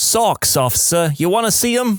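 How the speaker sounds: high-pitched, very fake Jersey accent. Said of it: "In my fakest Jersey accent".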